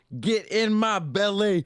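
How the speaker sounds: very high, drawn-out scream at top of lungs. Retelling yelling a movie line in the bathroom at his dad's wedding, imitating Fat Bastard screaming. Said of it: "I was screaming it at the top of my lungs".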